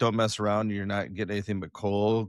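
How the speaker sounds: normal talking voice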